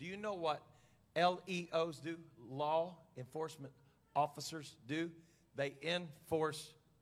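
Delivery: very slow, spelled-out delivery, each word drawn out. Speaker addressing an audience, said really slowly. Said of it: "I want to say this really slow".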